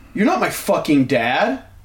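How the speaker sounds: put-on slow, snappish, defiant snapping delivery. Retelling how a man yelling about a script answered him: retelling someone snapping. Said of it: "snaps at me".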